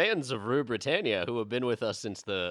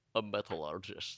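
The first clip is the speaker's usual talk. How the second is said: put-on Scottish film star voice, lower and quieter; 3 semitones lower, 9 dB quieter than usual. Trying to say a hard word in a Sean Connery voice. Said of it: "metallurgist in a Sean Connery voice".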